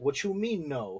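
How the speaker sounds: ordinary delivery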